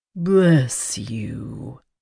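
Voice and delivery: slow, unhurried, reverent delivery. The shadow, having disarmed an attacker, speaks in a slow, reverent voice. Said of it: "the shadow said in a slow, reverent voice".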